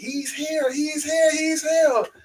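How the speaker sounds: put-on very high, stretched-out scream of joy. Retelling how mommy arrived in the parking lot, imitating someone screaming excitedly. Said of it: "she's just screaming like crazy".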